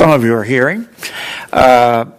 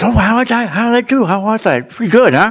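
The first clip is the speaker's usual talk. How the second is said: put-on pitched-up Boston area accent; 9 semitones higher than usual. Telling a story about a gentleman from Boston and his tutor, Boston accent. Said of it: "has what is normally known as a Boston accent".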